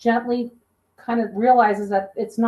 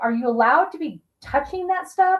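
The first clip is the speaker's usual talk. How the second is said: acted worried, caring, concerned voice; 4 semitones higher than usual. Retelling what a voice from an app asked the investigators, imitating a concerned voice. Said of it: "asking questions of like concern".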